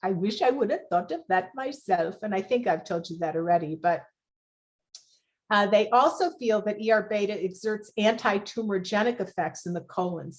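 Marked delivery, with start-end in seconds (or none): 0.0-2.2 put-on Swedish accent in English. Speaker quoting the researcher who discovered ER beta replying, Yanaki's Swedish accent. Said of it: "he said in his Swedish accent".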